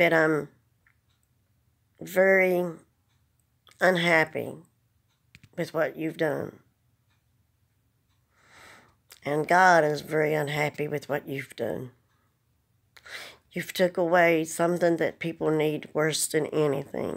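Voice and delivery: fighting tears, holding them back. Speaking to the president in a video, holding back tears. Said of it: "'Cause I'm trying not to cry again".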